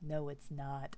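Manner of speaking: low, quiet, flat deadpan.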